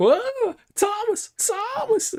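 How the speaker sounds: very high-pitched cartoon-style shriek. Voicing a startled housewife who spots Jerry: Tom and Jerry housewife voice. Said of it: "the housewife sees, uh, Jerry".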